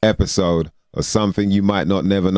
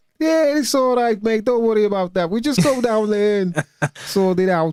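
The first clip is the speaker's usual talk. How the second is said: put-on Liverpool accent, very high pitch. Praising Liverpudlians, then imitating them in a Liverpool accent. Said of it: "Liverpudlians are so happy as well".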